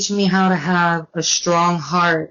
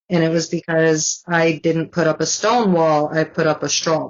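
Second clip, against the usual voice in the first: ordinary talk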